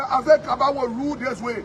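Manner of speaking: ordinary delivery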